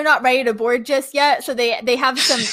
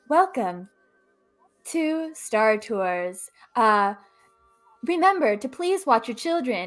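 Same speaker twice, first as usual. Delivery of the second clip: put-on female robot announcer voice, quieter; 6 dB quieter than usual. Speaker acting out the announcer she describes: robot lady announcer voice. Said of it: "She's this bronze little robot lady".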